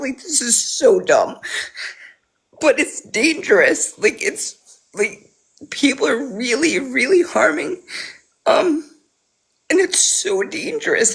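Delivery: tearful, talking while crying. Speaking on an app about people harming others, crying while talking. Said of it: "I'm crying on a fucking app".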